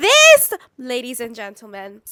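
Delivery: very loud, thrilled, swooping excited scream. Announcing a new manifesting journal to listeners: screaming excitedly. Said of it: "sorry for screaming in your ears".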